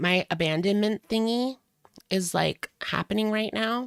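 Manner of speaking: put-on high, cutesy, helpless, babyish little voice. Quoting a voicemail line back mockingly: imitating her baby talk. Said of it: "she does, like, the baby talk".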